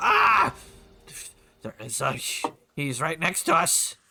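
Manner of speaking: panicked, freaking out. Voicing a monster that spots a hero right beside it: freaking out. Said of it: "she kind of freaks out".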